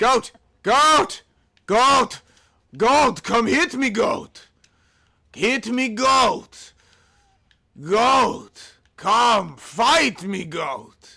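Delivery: slow, put-on character voice, each taunt drawn out. Challenging a goat to fight, as Saint-14: Saint-14 voice. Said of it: "I did a passable impression of Saint fourteen".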